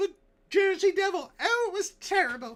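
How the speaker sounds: put-on very high, loud old-time New Jersey housewife voice. Telling of being adopted by the Jersey Devil, in a 1909 New Jersey housewife voice. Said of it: "that's my New Jersey housewife from nineteen oh nine voice".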